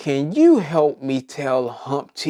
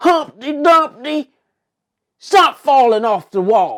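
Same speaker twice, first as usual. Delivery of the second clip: very high, loud, put-on country accent; 11 semitones higher, 7 dB louder than usual. Voicing a line about humpty dumpty in a country voice. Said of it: "in your best country voice".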